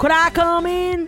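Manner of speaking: very slow, very high-pitched, drawn-out Southern accent. Saying a line the other speaker asked for, in a Southern accent. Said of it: "I did it in, like, a Southern accent".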